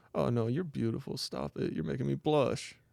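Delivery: soft, hushed stage whisper, private murmur. Retelling a roommate half-whispering to an invisible date: imitating Salem half-whispering. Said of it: "whispering to her".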